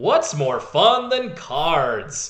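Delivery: slow, hammy, overacted delivery. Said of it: "Buster with the hammy setup of".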